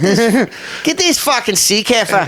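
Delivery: clumsy put-on Australian accent. Trying out accents with someone who says they're good, in an Australian accent. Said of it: "I suck in Australian accent".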